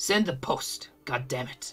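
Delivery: breathy, whispered, withering disdainful hush. Voicing a mother ordering her son to send the post: disdainful. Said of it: "disdain that only a mother could look at you with".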